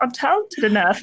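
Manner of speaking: put-on cartoon frog voice. Describing someone coasting on their talent, saying it in Kermit voice. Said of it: "It's Kermit voice".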